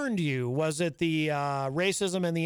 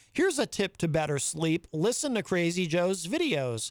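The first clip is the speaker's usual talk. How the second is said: normal talking voice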